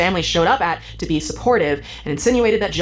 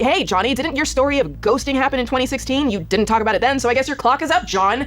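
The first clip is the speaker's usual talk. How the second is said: heated, worked-up, indignant, pitched-up angry tone; 7 semitones higher than usual. Reacting to a guest's comments about survivors: heated, angry. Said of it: "I'm sorry I'm getting heated".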